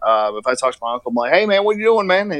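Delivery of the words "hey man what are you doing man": thick Southern drawl, pitched up. Retelling how he greets his uncle, Southern accent like Boomhauer. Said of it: "I talk like Boomhauer from King of the Hill".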